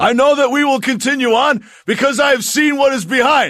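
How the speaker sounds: very high, loud yelling, proclaiming. Retelling a Matrix Reloaded scene, doing Morpheus's speech as a put-on yell. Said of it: "he's yelling over all these people".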